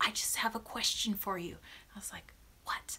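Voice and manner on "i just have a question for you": hushed, barely-above-a-whisper voice. Retelling a guy found in her room, the speaker imitates him whispering. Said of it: "he's whispering".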